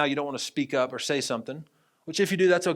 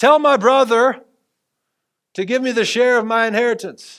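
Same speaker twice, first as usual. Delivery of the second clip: very loud, high-pitched male shout; 8 semitones higher, 11 dB louder than usual. Retelling a man in the crowd calling out to the rabbi: imitating a man shouting. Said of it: "He just shouts it out".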